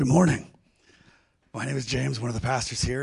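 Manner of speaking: voice not yet recovered. Greeting listeners as one of the pastors, voice not yet recovered. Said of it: "my voice is, is not, uh, fully recovered yet".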